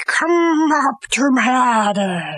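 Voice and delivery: slow, drawn-out, creepy put-on scary voice. Telling friends about a thin man in a dark house, quoting him: put-on scary voice. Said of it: "I'm doing the scary voice".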